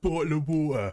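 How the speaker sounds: heavy British cockney accent. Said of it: "needs a thicker British accent to really sell it".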